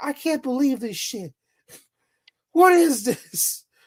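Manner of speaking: indignant shouting in disbelief. Speaker describing videos of people yelling and screaming, retelling an outraged yell. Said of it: "they were yelling".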